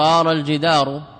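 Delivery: ordinary talk, nothing marked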